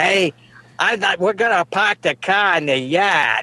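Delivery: put-on Boston accent. Speaker mocks how people in boston talk, imitating a boston accent. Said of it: "Or you go up to Boston, and they say".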